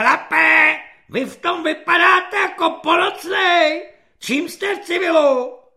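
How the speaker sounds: shrill, loud, screeching corporal voice, very high pitch. Narrator reads a corporal's line to a recruit pulling on a uniform, shrill corporal's voice. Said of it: "Povzbuzován ječivým hlasem svobodníka".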